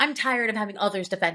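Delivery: mock, very played-up, theatrical, over-the-top delivery. Retelling a character's line from an audiobook scene: imitating a played-up line. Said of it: "It was very played up".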